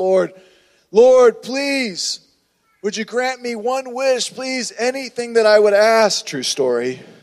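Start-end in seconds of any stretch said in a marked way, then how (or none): 0.0-6.2 urgent, pleading, high, sudden outcry. Telling a story of a man praying on a beach, retelling a man shouting. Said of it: "all of a sudden he just shouted out".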